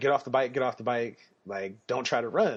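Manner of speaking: ordinary talk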